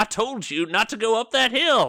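very high, loud, chastising scolding shout. Narrator voicing Sheriff Good Policy chastising the group, yelling and scolding. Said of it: "He's like yelling at them".

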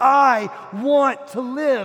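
loud, very slow shout at top of lungs. Retelling standing up among african brothers and sisters, shouting at the top of his lungs. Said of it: "at the top of my lungs ... I'm shouting".

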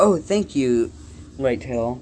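usual speaking voice

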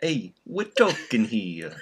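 Italian-American accent from New York. Interrupting the podcast intro in a Sopranos-style Italian accent. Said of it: "He sounds just Italian".

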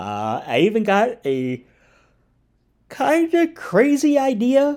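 very high, loud words through a yawn. Speaker introduces a video to viewers right after hitting record, yawning while talking. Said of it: "now I'm yawning".

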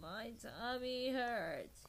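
pained, uncomfortable groan. Reading a story aloud, voicing a character's complaint: pained groan. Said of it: "he groaned".

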